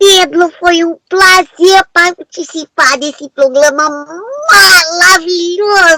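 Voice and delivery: put-on cartoon little boy voice. A guest wraps up a show appearance; Cebolinha voice. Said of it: "falar alguma frasezinha com a voz do Cebolinha".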